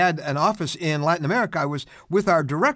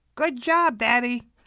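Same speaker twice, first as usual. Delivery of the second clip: put-on high-pitched little boy's voice; 7 semitones higher than usual. Retelling what a little boy said to his father from the back seat, imitating little John. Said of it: "This little voice said".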